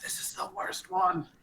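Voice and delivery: soft whisper. Speaking in character, whispering a remark to Thomas: in-character whisper. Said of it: "I whisper to Thomas".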